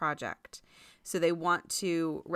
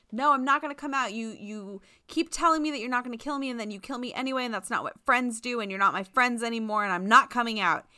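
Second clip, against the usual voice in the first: high-pitched, shouted yelling; 6 semitones higher, 4 dB louder than usual. Describing a favorite joke in a play, acting out an offstage yell. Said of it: "he just is yelling like".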